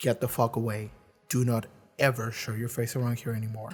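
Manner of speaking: very deep, low, deadly earnest, menacing tone. Retelling how Giles warned someone off: imitating Giles, dead serious. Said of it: "he went so real, so serious".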